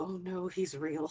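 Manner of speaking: slow muttering under the breath. Playing a character who spots a stranger, saying it under her breath. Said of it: "under her breath go".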